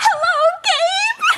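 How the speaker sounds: very high-pitched, thrilled, excited voice. Demonstrating another way to say hello, excited. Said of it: "say it in an excited way".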